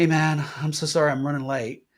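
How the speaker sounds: strained, under stress. Demonstrating to the listener how a phone call would sound, stressed voice. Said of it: "could hear the stress in my".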